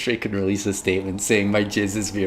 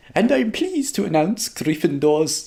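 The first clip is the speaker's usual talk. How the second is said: put-on terrible Scottish accent, pitched high; 9 semitones higher than usual. Describing a Great Hall scene, voicing Professor McGonagall in a bad Scottish accent. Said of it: "that was the worst Scottish accent ever".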